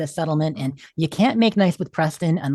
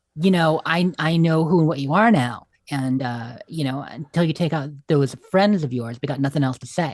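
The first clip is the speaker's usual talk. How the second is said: ordinary delivery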